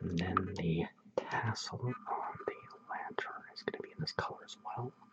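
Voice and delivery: soft, very quiet, hushed, barely voiced whisper. Describing the color for the lantern tassel while painting: whispering. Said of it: "I keep whispering this stuff".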